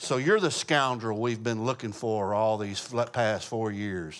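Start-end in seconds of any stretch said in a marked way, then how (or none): none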